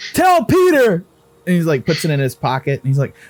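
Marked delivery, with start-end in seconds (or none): 0.1-1.0 shouting, higher pitch. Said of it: "And he fucking yelled".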